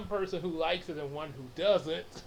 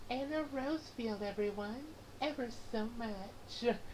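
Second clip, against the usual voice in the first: put-on little character voice of a woman; 7 semitones higher, 6 dB quieter than usual. Redoing a greeting introduction, now in the Anna Rosefield voice. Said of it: "it's more like this ... I was doing that little voice for her there".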